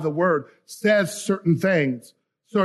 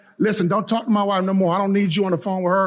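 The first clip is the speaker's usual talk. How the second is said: ordinary talk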